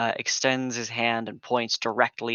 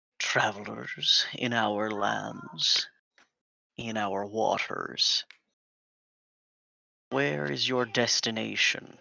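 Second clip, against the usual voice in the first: throaty, rumbling creature voice. Narrating a scene, voice a creature speaking to travelers in a throaty, rumbling voice. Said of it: "you hear a a throaty voice".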